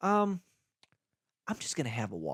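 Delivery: knowing, sing-song, conspiratorial in-on-the-secret tone. Showing how the drink order is told to staff: conspiratorial knowing tone. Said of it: "I say it in this tone".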